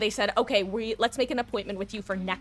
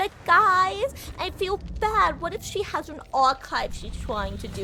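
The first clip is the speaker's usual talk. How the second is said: put-on high, babyish little-kid voice; 8 semitones higher, 3 dB louder than usual. Talking to viewers she calls guys, worrying about another woman's archive, baby voice. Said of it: "I don't know why I baby voice that".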